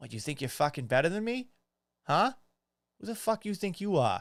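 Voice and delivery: put-on New England accent. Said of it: "My ears, the accent".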